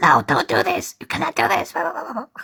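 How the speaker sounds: erratic, off-the-rails, unhinged, unstable delivery. Asked to talk like Jax again, imitating Jax: unstable, unhinged. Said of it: "talk like Jax again".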